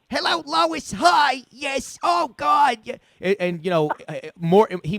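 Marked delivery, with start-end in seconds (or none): 0.1-2.8 very high, drawn-out, stretched cartoon voice. Showing how the Family Guy character sounds: Mort Goldman voice. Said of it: "Mort's like".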